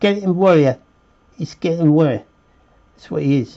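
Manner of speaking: put-on British Cockney accent. Drawing a skeleton warrior while explaining, naming it in a british cockney accent. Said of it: "I felt compelled to be like a British Cockney".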